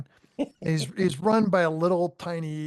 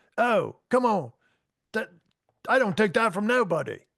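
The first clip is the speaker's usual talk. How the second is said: attempted Australian accent, pitched up; 5 semitones higher, 3 dB louder than usual. Retelling how the australian guy reacted to a comment, in an australian accent. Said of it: "I think you need to do the Australian guy".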